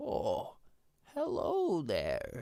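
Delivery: put-on almost an elderly man's voice, swooping pitch. Voicing a voice that players hear near a tree, old man's voice. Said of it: "you just hear like an almost like an old man's voice".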